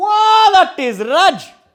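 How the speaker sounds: put-on mixed Geordie and Indian accent. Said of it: "And he goes".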